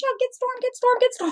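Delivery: mock very high, rushed, frantic panicked pleading. Retelling when her cat went down an armadillo hole, retelling panicked calls. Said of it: "I'm panicking as a kitty mom".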